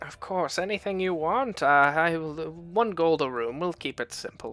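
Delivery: put-on voice of an old woman. Voicing the older woman behind the bar as travelers ask for lodging: older woman's voice. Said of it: "there is an older woman standing behind the bar".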